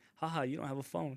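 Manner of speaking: usual speaking voice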